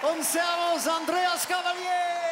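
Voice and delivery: name called out loud in announcer style.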